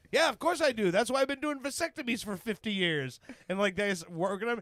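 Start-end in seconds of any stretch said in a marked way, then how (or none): 0.1-3.2 put-on heavy Spanish accent laid on thick, higher pitch. Retelling what an old doctor said during surgery: imitating a thick spanish accent. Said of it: "a thick Spanish accent".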